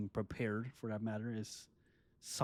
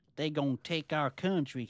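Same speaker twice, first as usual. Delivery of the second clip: fake Texan accent, higher and louder; 5 semitones higher, 6 dB louder than usual. Joking about what a hobby is not, in a put-on Texan accent. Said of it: "Sorry if I did a Mexican, Te-, Texan accent".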